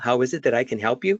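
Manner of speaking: question-like rising lift on the final word you. Describing the disliked habit of raising voice at sentence end: question-like rise on 'help you'. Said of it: "raise their voice at the end of the sentence".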